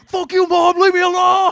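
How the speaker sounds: acted very high, very loud, shrill, drawn-out furious yell. Retelling a phone call interrupted by his mom: imitating own middle school anger. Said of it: "middle school mad where you just go".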